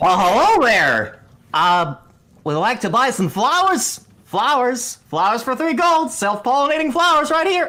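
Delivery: cheery, very bubbly voice, pitched way up. Voicing an NPC calling out to passers-by in the marketplace, very bubbly voice. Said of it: "you hear a very bubbly voice".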